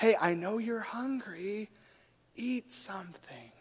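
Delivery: very quiet half-whisper, close and intimate. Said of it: "starts whispering in his ears".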